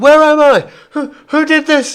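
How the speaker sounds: frightened voice. Narrating a game scene, voicing someone yelling from within the darkness: fearful tone. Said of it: "In sort of fearful tone".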